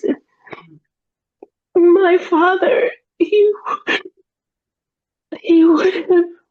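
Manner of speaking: high-pitched, grieving sobbing through tears.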